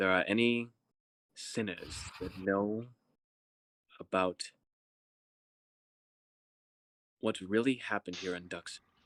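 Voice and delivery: conspiratorial stage whisper. Game master voicing the king, who half-whispers a request only one player can hear, half-whispering. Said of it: "He whispers to you, only you can hear this".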